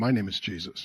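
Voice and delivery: put-on male voice. Retelling what a possessed woman said when asked her name, imitating a male voice. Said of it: "with a male voice".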